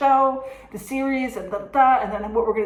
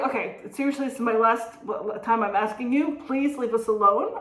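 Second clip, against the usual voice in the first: usual speaking voice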